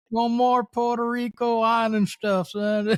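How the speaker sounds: high-pitched Southern Texan drawl.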